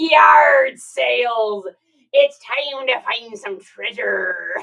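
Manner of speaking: put-on pirate voice and accent. Asked whether she said it with her pirate accent, in a pirate accent. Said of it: "Did you say yard sales with your pirate accent?".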